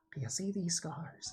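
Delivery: put-on laid-back drawl. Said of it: "do Owen Wilson as a voice for the character".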